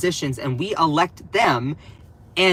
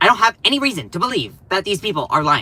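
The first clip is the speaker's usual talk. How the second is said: rattled off at top speed; 2 semitones higher than usual. Quoting a line from a news headline, in a Ben Shapiro impression. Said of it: "That's my Ben Shapiro impression".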